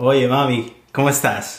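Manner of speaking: Dominican-style Spanish accent. Asked for the Dominican one, pretending to phone the requester, in a Dominican Spanish accent. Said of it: "Do the Dominican one".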